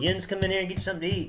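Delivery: put-on country twang. Imitating a grandmother calling someone in to eat: imitating grandmother's twang. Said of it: "that's some twang there".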